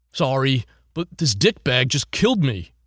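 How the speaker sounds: bleary and groggy. Narrator reads a gamer answering the bartender who scolded him for standing, groggy. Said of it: "[name] jerked up from his recliner, / [name] jerked up from his recliner, / groggy".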